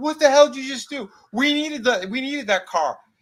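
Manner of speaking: mock, very high-pitched, shrill yelling. Retelling a film scene where one character yells at the deputy: imitating someone yelling. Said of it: "he's yelling at the deputy".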